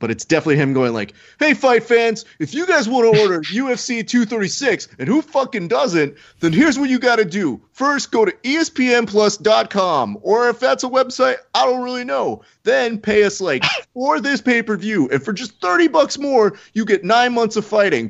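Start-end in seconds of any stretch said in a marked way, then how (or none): 1.4-17.9 put-on scream, much higher pitched, slower. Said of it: "he is screaming at you".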